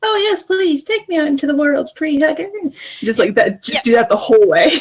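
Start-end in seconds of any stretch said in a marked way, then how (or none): 0.0-2.5 higher-pitched, obnoxious, sassy voice. Sassing back at him by repeating his words, in a higher, obnoxious mocking voice. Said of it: "in a slightly higher, more obnoxious voice".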